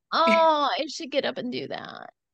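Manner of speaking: whiny, complaining tone. Showing how saying you should get up can sound: whiny complaining tone. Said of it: "Do you ever say it like this? ... It sounds so whiny".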